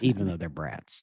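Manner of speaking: muttered under breath. Talking about parenting, adding a quick aside: said under one's breath. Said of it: "I'm saying that under my breath".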